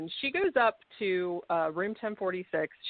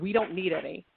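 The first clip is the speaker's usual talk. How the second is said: put-on gruff, mean man's voice. Retelling a strange man's reply heard from a room, in a gruff mean man's voice. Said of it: "It was like this really gruff man's voice".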